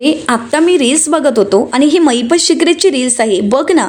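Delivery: ordinary talk, nothing marked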